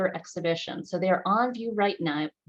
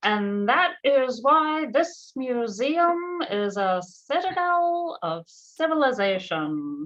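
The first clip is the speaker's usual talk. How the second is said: very slow, pitched-up, intoned presidential address voice; 6 semitones higher, 4 dB louder than usual. Quoting a president's radio address on a museum anniversary: pretty bad Franklin D. Roosevelt impression. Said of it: "my pretty bad impersonation of President Franklin D Roosevelt's radio address".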